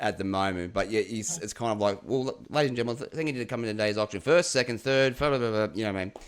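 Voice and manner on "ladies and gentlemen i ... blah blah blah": fast, rattled-off auctioneer patter. Asked to talk fast, a former auctioneer demonstrates fast auctioneer patter.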